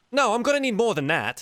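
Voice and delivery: very high-pitched halfling voice. Haggling in character over a trade, in a halfling bartering voice. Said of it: "sounds like a, a halfling barter at this point".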